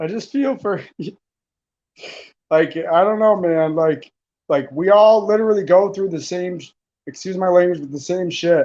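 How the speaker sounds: crying through the words. Speaker moved by someone's thoughtful replies to guests, crying while talking. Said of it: "I'm crying right now".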